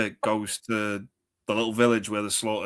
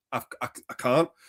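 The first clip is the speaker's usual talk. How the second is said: ordinary talk, nothing marked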